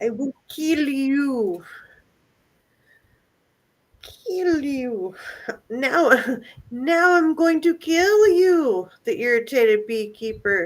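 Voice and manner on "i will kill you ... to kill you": put-on, high, slow menacing voice, "you" drawn out. Reading a news story aloud, quoting the angry driver: mock threatening voice used on cats. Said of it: "That's the voice I use with my cats".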